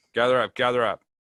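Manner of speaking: loud, commanding, authoritarian voice. Addressing a crowd during a tabletop game scene, in an authoritarian voice. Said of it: "I'm gonna use my authoritarian voice".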